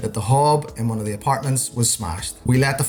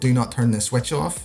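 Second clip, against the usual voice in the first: ordinary talk, nothing marked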